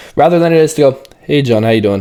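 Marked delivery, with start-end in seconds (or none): 1.2-2.0 flat, low-energy voice. Explaining why to start a greeting high, showing the other way: low-energy greeting. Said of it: "And then they have high energy".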